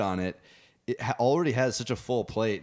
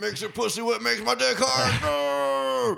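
put-on ranting yell, higher pitched; 13 semitones higher, 3 dB louder than usual. Doing an impression after a co-host asks for one: Alex Jones voice. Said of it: "Alex, Alex, easy".

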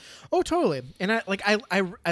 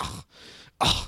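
low-pitched, disdainful scoff. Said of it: "she audibly scoffed".

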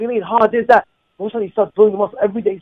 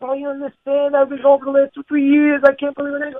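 put-on crying, tearful, higher pitch; 5 semitones higher than usual. Retelling a man who came late to shul: imitating someone crying. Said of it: "crying to me".

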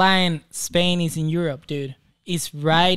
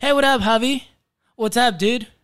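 pitched-up, casual, friendly voice; 6 semitones higher than usual. Doing an impersonation of a friend's accent: imitating Nick. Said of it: "that was my impersonation of Nick".

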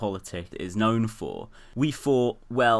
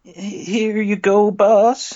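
put-on dweeb voice, much higher, louder; 13 semitones higher, 11 dB louder than usual. Directing a fellow actor, showing how the line should go: pathetic, nerdy Agent Falcon voice. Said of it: "Dweebier, dweebier, more pathetic, more nerdy".

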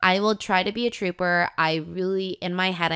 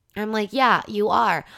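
normal talking voice

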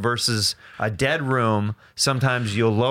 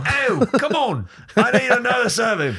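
very high, slow, put-on London accent; 12 semitones higher than usual. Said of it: "Why are you talking like that?".

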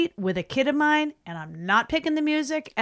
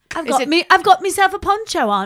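put-on, attempted British accent, pitched up; 7 semitones higher, 8 dB louder than usual. Saying a line about wearing a poncho as asked: attempted British accent. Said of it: "say it with a British accent".

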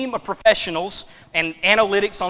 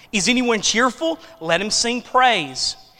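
plain

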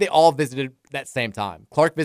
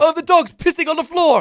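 put-on Irish boy accent, higher and louder; 7 dB louder than usual. Retelling a funny video of a bat chase: imitating Irish boy narrating. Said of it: "old Irish guy trying to catch a bat, and his, like, young son is narrating".

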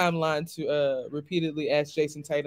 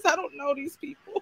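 voice pushed way up high; 11 semitones higher than usual. Talking about not recognizing people anymore, in Tommy Davidson voice. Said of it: "In my Tommy Davidson voice".

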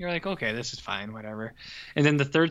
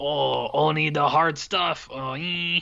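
imitated French accent; 2 semitones higher than usual. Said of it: "he's talking with a French accent".

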